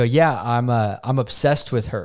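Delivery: ordinary talk, nothing marked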